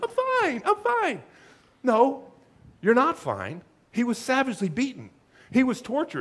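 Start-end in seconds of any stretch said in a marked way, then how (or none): 0.0-1.2 high squeaky voice, much higher. Showing how people sound when they claim they're fine, as Ross. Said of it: "like in that squeaky voice".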